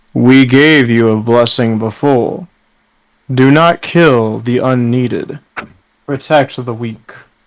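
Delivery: low, deep voice of a deity. Game master voicing the god answering a praying character: booming Thor voice. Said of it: "a voice that booms through your mind".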